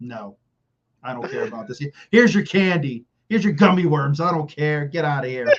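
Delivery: bitter, dismissive tone, sounding like not caring. Imagining Mike McDaniel selling snacks at the movies; imitating Mike McDaniel, mock-bitter. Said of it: "he's a bitter guy".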